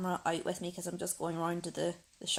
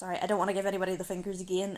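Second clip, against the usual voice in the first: plain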